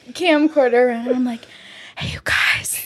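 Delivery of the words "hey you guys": secretive, hushed, breathy whisper close to the mic. Retelling filming a childhood home video: imitating her own past whisper. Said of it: "whispering into the video".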